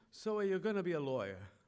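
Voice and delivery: thick, heavy put-on Italian accent. Retelling how Grandpa questioned him after working him over, imitating Grandpa's Italian accent. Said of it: "he was off the boat with the Italian accent".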